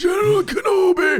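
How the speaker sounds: very high, squeaked-out voice. Showing what a movie character sounds like: General Grievous voice. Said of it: "That's what he sounds like".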